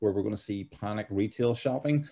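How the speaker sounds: ordinary delivery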